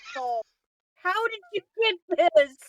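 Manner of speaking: stunned, incredulous tone. Voicing Margaret, who turns and looks at a player: Margaret, dumbfounded. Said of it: "she'll look at you just dumbfounded".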